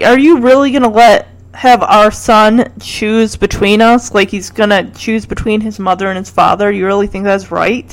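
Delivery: ordinary delivery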